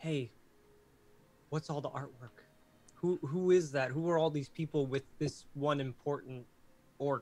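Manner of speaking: whispered speech. Suggesting how a player could ask a friendly orc about the artwork, whispering. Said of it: "just whisper like".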